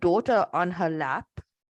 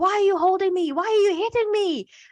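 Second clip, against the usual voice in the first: acted, very high, frantic panicked child voice; 13 semitones higher than usual. Retelling how a little boy reacted when held: imitating a child freaking out. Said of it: "he starts freaking out at first".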